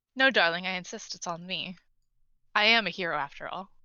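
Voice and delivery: amused, smirking voice. Voicing a character who offers to pay for the room: smirking. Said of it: "smirks at you, like, and just says".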